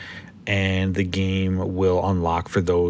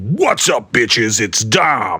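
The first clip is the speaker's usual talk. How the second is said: big, booming, loud yell; 3 semitones higher, 6 dB louder than usual. Telling about a call put on speaker, retelling Dom's booming yell. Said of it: "this booming voice comes on the phone and yells".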